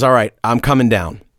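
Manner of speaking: normal talking voice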